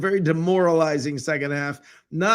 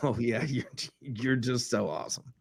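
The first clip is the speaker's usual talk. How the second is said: sarcastic, mocking, much quieter; 4 semitones lower, 8 dB quieter than usual. Speaker showing the tone the remark should be heard in: sarcastic mocking tone. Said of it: "you've got to understand the tone".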